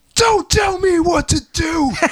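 very high, stretched-out, drawn-out howled scream. Retelling how he ran to the front of the stage, retelling a scream. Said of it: "he ran up to the front of the stage and he screamed".

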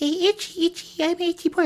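tiny, very high squeaky voice. Voicing an itchy nose yelling to be tickled: high-pitched squeaky voice. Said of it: "in like a high-pitched squeaky voice".

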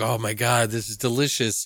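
usual speaking voice

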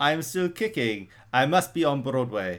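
put-on Belgian French accent. Riffing on what people want to see: Jean-Claude Van Damme accent. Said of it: "that was my Jean-Claude Van Damme accent".

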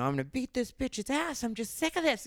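furious, high-pitched, angry shouting yell. Retelling a dive bar patron's fight with Tony: imitating someone yelling. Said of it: "So she's yelling at Tony".

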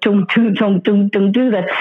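ordinary talk

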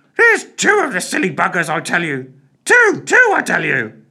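shrill, swooping, squawking parrot voice. Narrator reading a stuffed parrot that speaks up unasked, squawking parrot voice. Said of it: "squawked the parrot".

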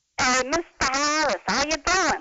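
New York accent, deliberately turned on. Asking someone to judge how it sounds, speaking in a New York accent. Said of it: "Get out your New York key".

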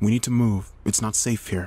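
ordinary delivery, nothing marked

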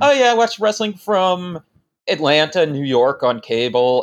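normal talking voice

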